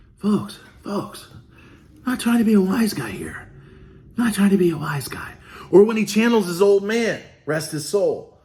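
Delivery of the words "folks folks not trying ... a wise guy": quiet, hushed whispered delivery. Mocking a politician's speech from last night: imitating someone whispering. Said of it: "Whispering, whispering, you gotta whisper".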